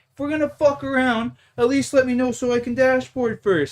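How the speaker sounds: play-acted, high-pitched, furious, freaking-out rant. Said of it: "He starts freaking out at the guy".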